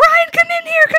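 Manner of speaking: very high, loud, excited shriek. Retelling calling Brian in after reading a book blurb, retelling her own scream. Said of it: "and I start screaming".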